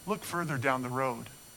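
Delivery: gentle, calm, reassuring, soothing voice. Retelling the teacher's words to them on the road: retelling calm, soothing voice. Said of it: "in a calm and soothing voice".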